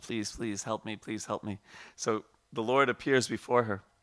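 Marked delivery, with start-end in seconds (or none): 0.0-1.6 mock earnest pleading, much quieter. Telling a story of a woman praying to a god, acting out earnest praying. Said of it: "really, you know, praying to Krishna".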